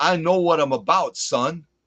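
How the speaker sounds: shaky, slow, bad put-on Brooklyn accent. Imitating friends from New York boasting about knowing the job: Brooklyn accent. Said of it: "I'm kinda doing a Brooklyn accent".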